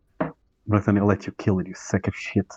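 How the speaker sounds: fast, close whisper. Player's character pulls a man close before letting him go, whispering in his ear. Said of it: "whisper to his ear".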